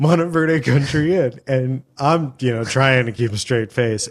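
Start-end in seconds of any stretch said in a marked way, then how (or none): 0.0-1.4 high-pitched yell, calling out. Retelling how she yelled at a gate from the car window: imitating someone yelling. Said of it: "She's yelling at the gate".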